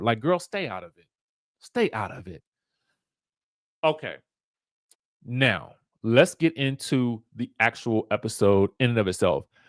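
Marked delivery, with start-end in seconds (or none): 0.2-2.4 firm, direct telling-off tone. Retelling how Evelyn took Denise to task: imitating Evelyn scolding. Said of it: "That's basically what Evelyn was trying to tell her".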